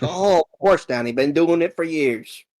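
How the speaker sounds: put-on old man voice. Retelling a story, voicing a gnome-like figure answering Danny, old man voice. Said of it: "he sounds like an old man".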